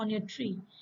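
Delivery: ordinary delivery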